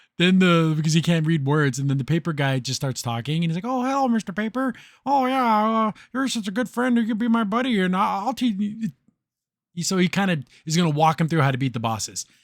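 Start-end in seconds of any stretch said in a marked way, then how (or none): 3.7-8.9 put-on childlike voice, higher. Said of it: "he's childlike".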